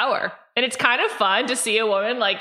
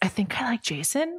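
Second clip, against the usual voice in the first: soft, hushed, quiet whisper; 6 dB quieter than usual. Quoting a line from the episode in a whispered Brandon voice. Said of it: "Brandon voice".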